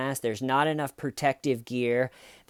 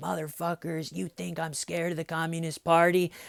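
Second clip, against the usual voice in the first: put-on daring, goading jeer, tearful and defiant; 4 semitones higher, 3 dB quieter than usual. Retelling what a man said in one of his videos, mock taunting. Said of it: "Like really taunting them".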